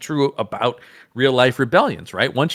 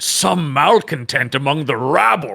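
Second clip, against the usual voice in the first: slow, harrumphing man grumbling disapproval. Reading a leader's line aloud: Beardo harrumphing voice. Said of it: "That is a harumphing man if I've ever heard one".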